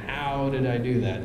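plain

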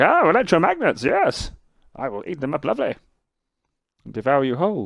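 villainous robot voice. Imagining what the robot enemy thinks when it senses the player: imitating the robot enemy. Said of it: "he's like a robot".

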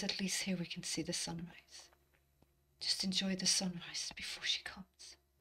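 quivering, trembling whisper, close to tears. Voicing a character whispering into the other's hair before dawn: whispering, quivering, almost crying. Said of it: "He whispers ... quivering and almost crying".

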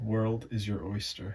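put-on American accent. Taking a turn at a phrase said to be hardest, in an american accent. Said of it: "In an American accent".

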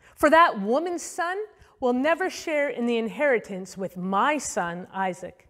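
ordinary delivery

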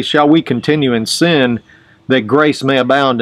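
ordinary talk

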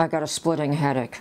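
ordinary talk, nothing marked

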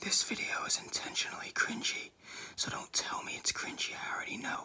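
hushed whisper. Video maker introducing an intentionally cringy video, whispering. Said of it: "don't ask me why I'm whispering".

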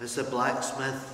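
plain

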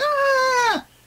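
very high, pained scream. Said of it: "your character's screaming".

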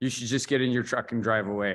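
ordinary talk

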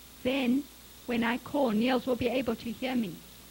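plain

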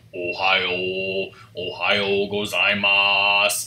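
insanely deep voice, Ohio stretched out. Retelling the speaker in a japanese class video: imitating an insanely deep voice. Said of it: "had an insanely deep voice".

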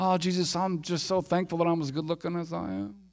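put-on humble, thankful, bragging tone. Acting out a prayer that secretly brags: mock humble bragging. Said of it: "humble brag?".

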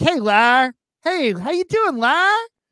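cheerful, acted-out New York accent, very high. Describing a favorite character greeting Larry, imitating Susie being happy. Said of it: "the way she talks when she's happy".

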